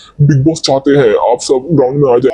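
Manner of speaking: thick announcer-style voice. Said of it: "ऐसी मोटी आवाज़ में मैंने बोला".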